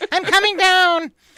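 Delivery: very high, loud, chipmunk-like helium squeak. Retelling how a man fell back to earth, in a high-pitched helium voice. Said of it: "in this like high pitched helium voice".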